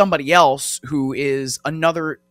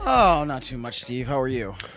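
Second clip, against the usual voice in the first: tired, exhausted, worn-out sounding voice; 4 dB quieter than usual. An NFL insider greeting the host as he joins the show, exhausted. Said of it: "You sound exhausted".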